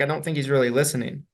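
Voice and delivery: normal talking voice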